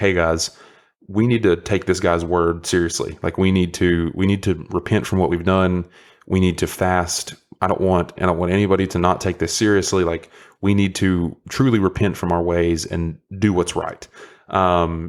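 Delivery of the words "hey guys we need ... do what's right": plain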